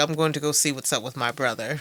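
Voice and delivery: mocking, thoroughly sarcastic tone. Retelling a movie character's line about his brother: imitating sarcastic Walter. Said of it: "Walter was all sarcastic".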